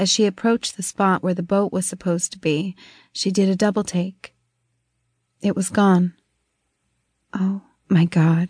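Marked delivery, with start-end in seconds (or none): 7.3-8.5 hushed whisper, much slower. A woman finds the boat gone from its spot at the dock; whispering. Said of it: "she whispered".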